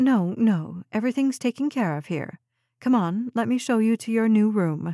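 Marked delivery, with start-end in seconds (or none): none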